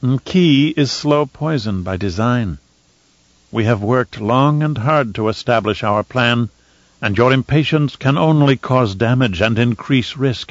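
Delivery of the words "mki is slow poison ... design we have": plain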